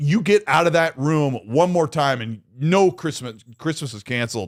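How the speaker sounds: ordinary delivery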